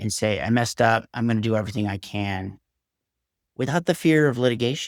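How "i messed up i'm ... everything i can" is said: ordinary delivery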